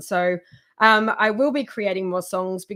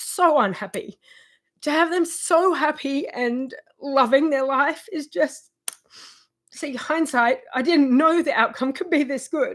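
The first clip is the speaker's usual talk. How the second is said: tearful, blubbering, high breaking voice; 5 semitones higher than usual. A parent speaking about their children, blubbering and crying. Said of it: "So sorry for blubbering".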